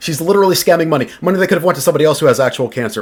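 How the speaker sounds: fast, loud, rapid-fire, rushed delivery. Reacting to a woman's GoFundMe, the speaker calls it scamming: talking fast. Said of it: "I'm talking fast".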